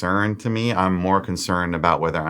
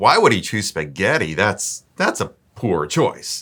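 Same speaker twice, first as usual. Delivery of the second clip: put-on exaggerated dismissive, scornful tone. Acting out a date dismissing her spaghetti order: put-on exaggerated dismissive tone. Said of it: "that's the exaggerated version".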